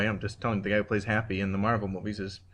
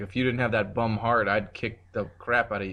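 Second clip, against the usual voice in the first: ordinary talk, nothing marked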